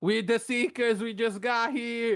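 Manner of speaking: high-pitched yelling scream. A player's character joins the screaming to reach the guards, screaming. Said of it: "I add to the screaming".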